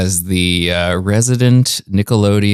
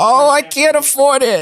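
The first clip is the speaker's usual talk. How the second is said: very high, squeaky little character voice. Answering a request for a voice: Squibbly Bits character voice. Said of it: "Wow, Squibbly Bits".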